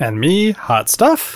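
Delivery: upward inflection at end. Introducing yourself by name after the others: rising tone at the end. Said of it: "a real upswing in your".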